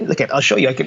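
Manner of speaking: ordinary delivery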